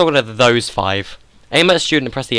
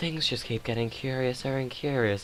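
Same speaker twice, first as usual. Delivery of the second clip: very soft, very quiet put-on girl voice; 14 dB quieter than usual. Giving the characters different voices, the speaker tries out a girl voice. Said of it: "how do I do a girl voice again?".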